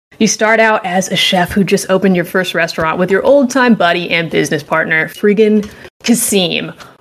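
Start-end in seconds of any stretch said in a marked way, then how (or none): 5.1-6.7 slow, drawn-out, angry tone. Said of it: "I'm so mad at Kasim right now".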